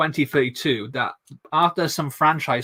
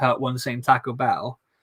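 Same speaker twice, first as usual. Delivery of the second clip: normal talking voice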